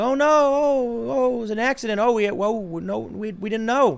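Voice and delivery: high, slow, mock-innocent panic. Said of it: "feign like".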